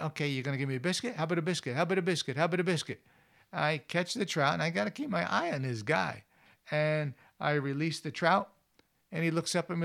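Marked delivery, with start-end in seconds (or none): 0.0-3.0 put-on, eager, pleading, begging puppy voice. Telling a fishing story, voicing a bird that approaches like a puppy, acting out eager begging. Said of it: "like a little puppy dog going".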